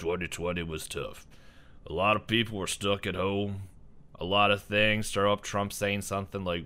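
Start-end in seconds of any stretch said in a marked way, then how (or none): 0.0-5.1 rough, rugged, gruff cowboy voice. Imagining a Super Bowl commercial about 2020, in a gruff cowboy voice. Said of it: "gruff cowboy voice".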